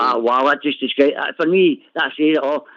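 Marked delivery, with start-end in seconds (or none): none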